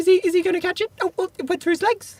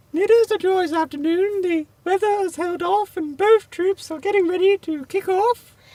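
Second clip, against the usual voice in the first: posh, regal, royal-sounding announcer-style voice. Commentating a football match between troops, the Queen's voice. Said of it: "in the voice of Her Majesty the Queen".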